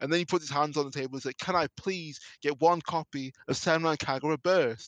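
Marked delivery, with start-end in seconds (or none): 1.4-4.9 put-on booming voice, loud, slow, deliberate, drawn-out. Retelling an ad where a customer finally asks the cashier: imitating a loud request. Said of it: "so shocked at not only just the volume".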